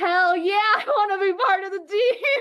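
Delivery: high, loud, gleeful, laughing, unprofessional cheer.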